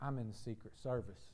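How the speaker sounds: very quiet, low, hushed, leaning-in half-whisper. Telling a joke, voicing the man's reply to the pastor: retold half-whisper. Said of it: "leans in real close and he whispers".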